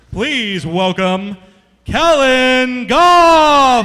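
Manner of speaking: very loud, booming wrestling ring-announcer bellow, stretched words. Introducing guests one by one, in a wrestling announcer voice. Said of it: "I'm going to sound like a wrestling announcer".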